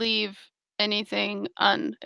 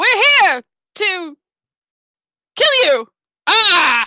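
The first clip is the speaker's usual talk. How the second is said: shrill, very loud in-character yell; 9 semitones higher, 8 dB louder than usual. Playing a character pushing through a door to shout angry words: in-character yell. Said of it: "and I will yell".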